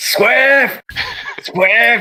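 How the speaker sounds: very high, searching calling shout. The game master voices V MAX calling for Swift through the ruins, shouting. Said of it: "you just sort of hear V MAX shout out".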